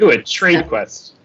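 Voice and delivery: dry sarcastic tone. Reacting to a game idea from another speaker, sarcastic-sounding. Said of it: "that sounded sarcastic".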